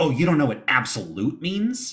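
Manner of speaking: high, condescending, talking-down tone. Retelling how someone answers a question about a word, mock-condescending tone. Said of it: "they'll say it in a really like condescending way".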